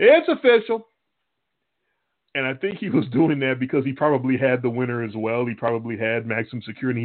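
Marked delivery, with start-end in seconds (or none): 0.0-0.9 very high, loud yelling. Retelling a guy at Southland Park during the long wait: imitating someone yelling. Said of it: "He just kept yelling".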